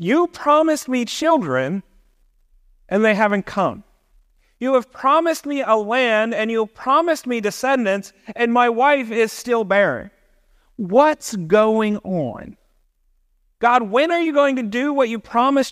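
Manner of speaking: mock reproachful, doubting, accusing, demanding tone. Speaker voices a man's complaint to god from the passage: acting out an accusing tone. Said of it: "There's some accusation in his voice".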